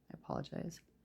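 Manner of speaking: very soft, quiet whisper. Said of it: "So I'm talking quietly".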